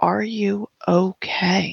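whispering softly. A worried character leans to her ear, in a quiet whisper. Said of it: "just kind of quietly whisper in her ear".

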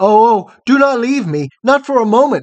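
high-pitched, loud, pleading cry. Narrator reads a man calling to a woman as she springs up to leave; crying out. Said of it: "cried Photogen".

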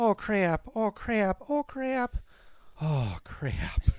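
put-on Wisconsin accent with moans. Discussing Wisconsin speech and recalling a comedy bit, imitating Family Guy's orgasming Wisconsin woman. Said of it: "A woman from Wisconsin orgasming".

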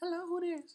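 very high, cute put-on voice. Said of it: "I put on my cute voice when I wake up".

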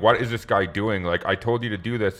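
put-on flustered voice. Retelling how McNulty reacts when his orders are rejected: imitating McNulty getting flustered. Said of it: "he gets so flustered".

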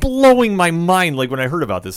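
loud shouting yell, high and swooping. Talking about an upcoming fight matchup to listeners, yelling into the mic. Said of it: "I'm sorry I'm yelling into the mic".

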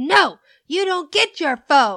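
loud, yelled, shouting voice. Retelling two people's fight over a phone, imitating her yelling. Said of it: "just yelling at each other".

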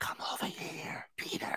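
very quiet, hushed, breathy whisper. Retelling how a woman calls someone over, imitating her whisper. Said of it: "she whispers everything".

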